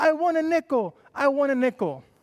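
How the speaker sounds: put-on play-acted sobbing, high crying child's shout. Retelling a story of a girl going to her room: imitating a child crying and shouting. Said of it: "crying and shouting".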